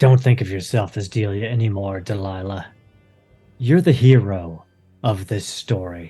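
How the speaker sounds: soft, quiet whisper. Deacon scoops Delia up in his arms and speaks down to her, whispering. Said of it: "he would whisper down".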